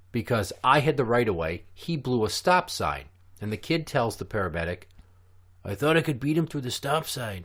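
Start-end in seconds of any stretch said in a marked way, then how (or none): 5.6-7.4 bad put-on Mexican accent, rattled off fast and high. Retelling what a kid told the paramedic after a crash, imitating a Mexican accent. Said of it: "If you can't tell the impression I'm doing".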